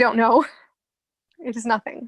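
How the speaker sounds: tearful, crying voice. Answering why they are crying, crying while speaking. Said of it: "why are you crying?".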